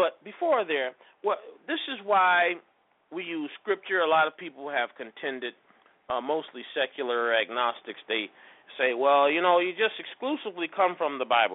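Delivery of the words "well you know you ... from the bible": ordinary delivery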